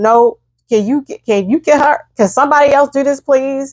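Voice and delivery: play-acted pleading voice, crying through tears. Retelling a plea to get another person to draw blood: retelling own crying plea. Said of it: "I just started crying".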